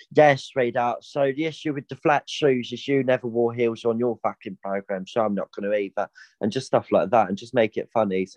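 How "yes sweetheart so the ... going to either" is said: put-on blunt, old woman character voice. Imagining answering a judge's critique in Nan voice Catherine Tate character. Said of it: "I'd probably just do my Nan voice".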